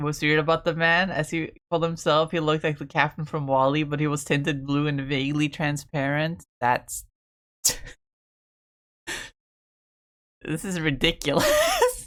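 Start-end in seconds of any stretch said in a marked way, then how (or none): 6.6-12.1 slow delivery, words broken up by laughter. Reacting to someone's distressing dream, laughing while talking. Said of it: "I'm sorry for laughing".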